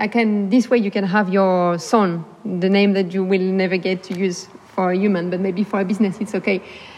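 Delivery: plain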